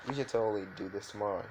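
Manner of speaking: ordinary delivery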